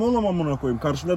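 normal talking voice

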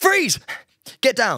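high, jittery nervous voice, breaths between words. Showing a role from acting class, a cop's first bust: nervous cop role. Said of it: "I played a cop once".

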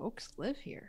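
quiet half-whisper, slightly surprised, a little taken aback. Voicing a character turning back to everyone: quiet, slightly surprised. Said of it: "quietly say with a bit of surprise".

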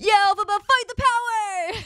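high excited holler.

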